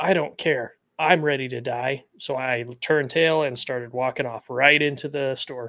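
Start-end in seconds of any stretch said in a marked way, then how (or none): 0.0-2.0 acted, restrained, mild yell. Retelling what a man in a street argument said: imitating someone yelling.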